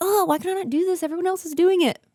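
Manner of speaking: put-on high, fast, frustrated teen voice. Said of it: "I would get frustrated".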